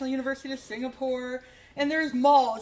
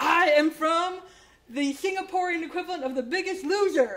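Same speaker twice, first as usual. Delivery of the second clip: put-on excited voice, higher; 4 semitones higher, 3 dB louder than usual. Retelling a stranger announcing his show in a mall: imitating someone excited. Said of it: "And he's all excited".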